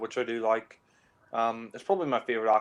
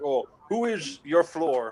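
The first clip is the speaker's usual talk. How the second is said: slow, drawn-out fake German accent; 4 semitones higher, 3 dB louder than usual. Describing a film scene, quoting Sean Connery putting on a fake German accent. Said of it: "when he's putting on the accent".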